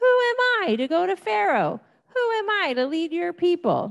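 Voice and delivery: high, frightened pleading voice with wide-ranging pitch.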